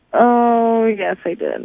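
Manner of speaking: rueful, swooping delivery heavy with regret. Reminded on the show of a date with George, admitting it, regretful. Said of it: "Sounds like regret in your voice".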